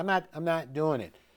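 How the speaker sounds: usual speaking voice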